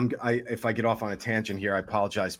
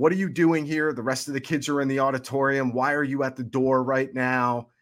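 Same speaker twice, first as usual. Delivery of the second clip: put-on teacher voice, yelling and scolding; 3 semitones higher than usual. Recounting arriving at the classroom door as a new sixth grader, imitating teacher yelling. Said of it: "she starts yelling".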